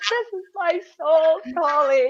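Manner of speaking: very loud, high, wailing, tearful sobbing. Retelling a hard decision about leaving family, acting out past tearful sobbing. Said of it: "I'm in tears sobbing like".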